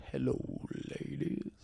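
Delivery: very soft, gentle, soothing, hushed, breathy whisper.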